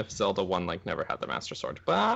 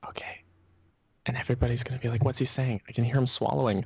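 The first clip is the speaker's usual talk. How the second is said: put-on, fake ASMR whisper; 2 semitones higher than usual. Joking about saying the whole podcast like this: put-on asmr whisper. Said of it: "A S M R".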